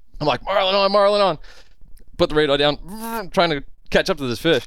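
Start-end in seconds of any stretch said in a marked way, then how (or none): 0.5-1.4 re-enacted yell, much higher. Retelling yelling over the radio to a buddy back at the lodge: retelling a yell. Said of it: "I'm yelling to my buddy".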